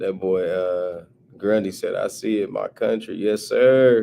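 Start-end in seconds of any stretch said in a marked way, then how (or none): 1.9-3.1 put-on country accent, lower. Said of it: "Had to hit him with the country accent".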